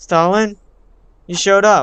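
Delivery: high surprised exclamation. At school, greeting the only other person who showed up: surprised. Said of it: "Why do you sound surprised?".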